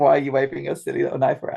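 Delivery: ordinary delivery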